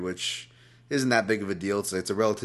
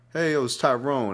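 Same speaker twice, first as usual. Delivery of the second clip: higher-pitched urban guy voice; 5 semitones higher, 3 dB louder than usual. Retelling voicemail tests from a podcast bit: imitating an urban guy. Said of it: "an urban guy like".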